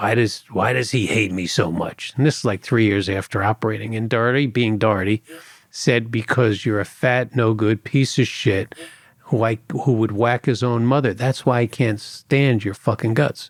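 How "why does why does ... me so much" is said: rough, rasping, hoarse voice. Retelling the Source's question about the speaker's partner, in a raspy voice. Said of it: "the Source was like in a raspy voice".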